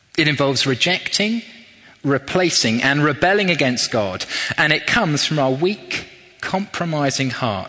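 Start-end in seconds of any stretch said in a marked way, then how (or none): none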